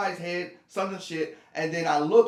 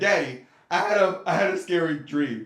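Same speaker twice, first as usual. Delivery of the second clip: put-on young little-boy voice; 4 dB louder than usual. Retelling asking the father for comfort after a nightmare: imitating his childhood self. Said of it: "I said".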